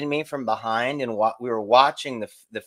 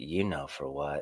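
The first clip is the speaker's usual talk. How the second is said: super sexy, low, seductive come-on voice; 10 semitones lower, 11 dB quieter than usual. Retelling her call asking to be picked up: imitating a super sexy voice. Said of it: "That was just super sexy voice".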